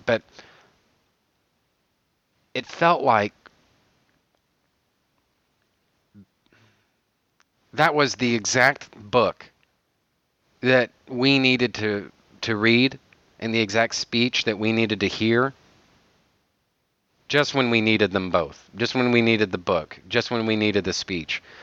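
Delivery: getting choked up with emotion. Speaker talking about a speech in a book, choked up. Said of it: "I'm getting choked up just".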